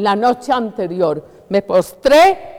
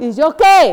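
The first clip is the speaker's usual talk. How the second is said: high, tearful, acted crying shout; 5 semitones higher, 3 dB louder than usual. Preacher retelling how he cried out to Jesus while weeping, retelling a crying shout. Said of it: "Y llorando, llorando".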